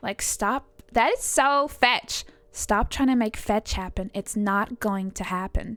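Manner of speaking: imitated valley girl accent. Explaining the valley girl type from teen movies, quoting a line in valley girl accent. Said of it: "you're brought up with like Valley Girl".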